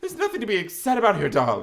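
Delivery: badly done, high, swooping sing-song voice. Retelling a scene between Miss Darbus and a stepmother, a very bad Miss Darbus impression. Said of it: "This is my very bad Miss Darbus impression".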